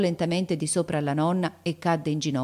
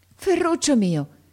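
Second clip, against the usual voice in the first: very high, startled, anxious, astonished cry; 10 semitones higher, 4 dB louder than usual. The grandmother cries out to the weakening boy, astonished and uneasy. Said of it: "esclamò la nonna, stupita e inquieta".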